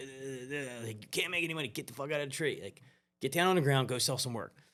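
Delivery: rapid-fire, fast, high-pitched rattling fast talker. Retelling a mentor's call telling him to leave the tree: imitating Rick's fast talking. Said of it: "he was real fast talker".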